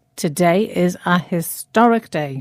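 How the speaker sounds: plain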